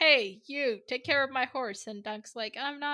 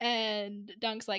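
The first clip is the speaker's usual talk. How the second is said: usual speaking voice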